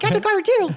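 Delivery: very high, rattled off as one run-together word. Recalling a funny scene, quoting Jackson's line with the words run together. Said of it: "Sounds like one word".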